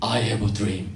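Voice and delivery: put-on deep, hushed preacher's oratory voice. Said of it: "흑인이라 제가 이렇게 성대모사 했습니다".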